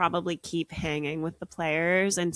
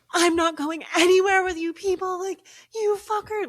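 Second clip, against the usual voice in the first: put-on screaming and crying, much higher pitch; 13 semitones higher, 6 dB louder than usual. Describing a woman told nothing can be done for her brother, imitating screaming and crying. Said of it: "she's like screaming and she's crying".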